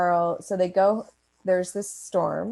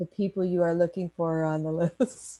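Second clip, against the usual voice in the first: mock dramatic stage whisper. Describing a scene, quoting a man's line in a mock stagey whisper. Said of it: "in his stagey whisper voice".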